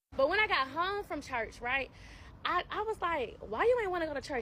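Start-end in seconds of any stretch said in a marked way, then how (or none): 3.4-4.5 play-acted sassy, challenging tone, full of attitude. Retelling asking the partner about church: retelling own question with attitude. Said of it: "I had an attitude".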